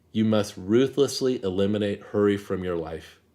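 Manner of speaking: ordinary delivery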